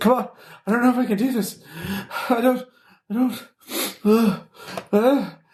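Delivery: very high, breathless, short-of-breath rising panic. Voicing a trainee failing the hatch drill: panicked, short of breath. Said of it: "You can hear the panic rising in his voice".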